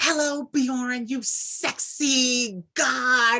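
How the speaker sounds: put-on very slow, high, drawn-out, over-the-top hype. Imitating a woman's voice message greeting him by name, imitating over-the-top voice message. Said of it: "her voice messages are crazy".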